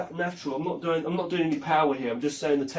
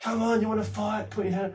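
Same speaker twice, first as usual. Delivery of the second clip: mock shouting, pitched high; 5 semitones higher than usual. Retelling two people squaring up in a pub: imitating someone shouting. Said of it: "he starts shouting".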